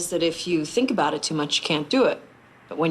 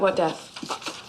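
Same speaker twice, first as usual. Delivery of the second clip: whispered, unvoiced aside. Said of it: "You don't have to whisper".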